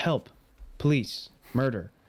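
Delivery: mock, pointedly and aggressively nonchalant sarcasm. Retelling Willy Wonka's reply to a mother's plea: imitating Willy Wonka's aggressive nonchalance. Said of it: "insanely aggressive nonchalance".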